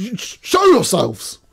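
slow, stammering yell, stumbling at the start. Voicing a student spotting invisible intruders: NPC yelling. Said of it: "one of them just yells".

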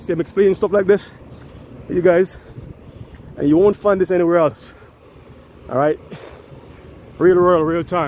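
winded, loud, high delivery. A youtuber addressing viewers about the channel, out of breath. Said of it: "I'm out of breath".

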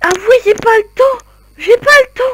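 frantic, exasperated, high, loud, repeating wail.

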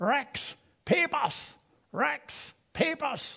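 very high, very slow Pennsylvania Dutch holler. Retelling how the neighbor hollered for papers from his horse wagon: imitating Mister Schlegel yelling in Pennsylvania Dutch accent. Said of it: "he would yell".

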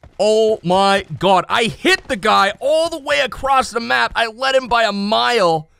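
high, excited, totally losing it freaking out. Streamer to viewers after hitting a player across the map, freaking out. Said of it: "I am freaking out right now".

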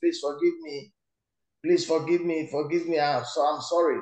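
ordinary talk, nothing marked

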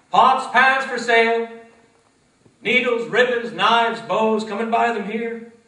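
street vendor cry, very loud, very high, booming. Storyteller voicing the peddler where people gather, peddler crying out his wares. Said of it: "There was once a poor, but a kind-hearted peddler".

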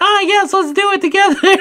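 very high, put-on woman's voice. Recapping a scene where characters sneak up behind him, in a fake female voice. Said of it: "a fake female voice".

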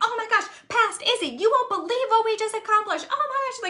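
high, thrilled, bubbling-over gushing excitement. Retelling speaking as future self to past self: imitating own excited self-talk. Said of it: "so excited".

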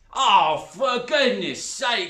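drawn-out, very loud, high shout at full volume. A woman, told by a girl to just go, answers, shouted. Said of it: "shouted the woman".

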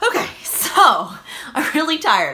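breathless, puffed out, winded voice. Talking viewers through a list of books, the speaker is tired and out of breath. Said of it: "I'm like out of breath".

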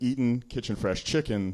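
plain

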